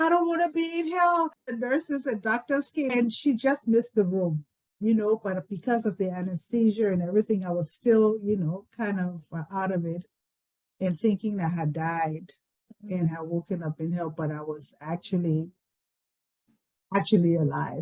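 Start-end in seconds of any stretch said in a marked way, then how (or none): 0.0-1.3 high-pitched, panicked screaming. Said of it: "I started screaming".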